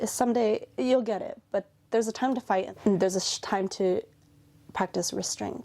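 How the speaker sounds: normal talking voice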